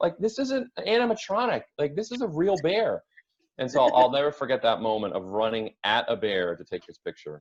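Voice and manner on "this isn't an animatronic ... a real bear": mock shrill, very high-pitched yelling. Retelling how the cook warned tourists running at a bear: imitating a man yelling. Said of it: "the guy is yelling at us".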